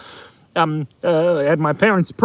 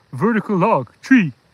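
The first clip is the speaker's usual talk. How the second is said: heavy, laid-on cartoon Canadian accent. Imitating the two moose playing I spy: Canadian accent. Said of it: "Like the two mooses from, um, Brother Bear".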